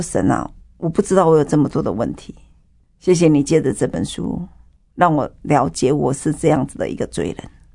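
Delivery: ordinary talk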